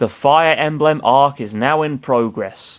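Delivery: plain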